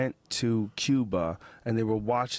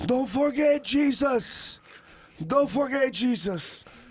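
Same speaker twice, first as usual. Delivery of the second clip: put-on heaviest Cuban accent, very high and slow; 3 dB louder than usual. Retelling a man whose warning people misheard, in a thick cuban accent. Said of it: "thick Cuban accent, the thickest".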